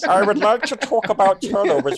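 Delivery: very high cartoon frog voice. Answering a listener's question from Twitter, speaking in a Kermit the Frog voice. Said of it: "Kermit the Frog here".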